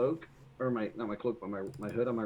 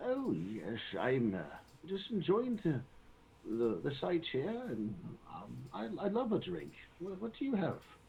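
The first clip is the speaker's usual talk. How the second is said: put-on halting, swooping, rambling old man voice; 4 semitones higher, 4 dB quieter than usual. In a role-play, answering a waiter asking about food or drink, old man voice. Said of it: "You do a perfect old man voice".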